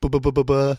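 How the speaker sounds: high, loud stammering babble.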